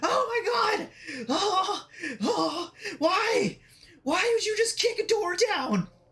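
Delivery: very high, frightened, panicked little kobold voice. Voicing a startled kobold after the door is kicked open: panicked kobold voice. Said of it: "He's like".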